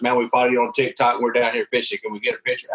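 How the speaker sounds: ordinary delivery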